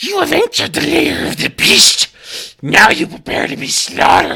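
giant king rat creature voice. Voicing a giant king rat as dungeon master: giant king rat voice. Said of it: "the giant king rat in the center looks at you and says".

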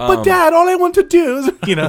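put-on British accent, very high voice. Playing a son speaking to his dad in an improvised scene: British accent. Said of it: "Why does he have a British accent?".

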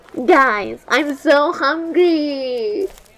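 loud, very slow, hungry, dragged long. Showing friends how the line can be said, the speaker is imitating Merritt. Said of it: "If I say it like this".

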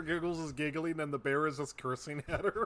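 ordinary delivery

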